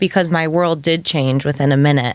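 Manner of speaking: plain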